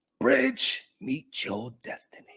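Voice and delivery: quiet, breathy whisper under the breath. Acting out a joke quote from a former president sipping tea, whispering. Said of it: "he was whispering".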